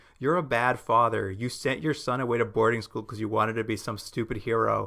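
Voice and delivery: ordinary talk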